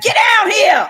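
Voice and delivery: very high-pitched, loud hollering. A parent tells others how they yell at their kids, retelling a loud scream. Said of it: "I be screaming so loud".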